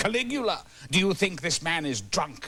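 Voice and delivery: high, theatrical, regal, imperial voice.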